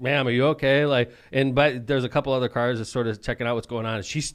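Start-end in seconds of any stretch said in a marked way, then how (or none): 0.0-0.9 put-on polite concerned tone. Retelling answering a woman yelling at you in your car, mock-polite concern. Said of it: "I'm just like".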